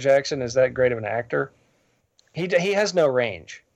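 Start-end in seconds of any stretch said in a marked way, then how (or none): none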